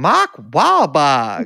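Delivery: put-on Carolina accent, not quite right. Demonstrating an extraordinary example of an accent that you heard, in an attempted carolina accent. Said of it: "an extraordinary example of a Carolina accent".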